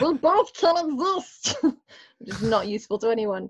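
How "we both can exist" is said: high, slow, drawn-out creature voice. Saying a line to them in a best demon voice: Stitch voice. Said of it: "in my best demon voice, wait, I'm just going to sound like Stitch from Lilo and Stitch".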